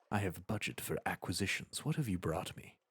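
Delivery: whispered on the breath, breathy and hushed. Narrator reads the scholar's line in a breathy whisper. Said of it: "the scholar whispers breathily".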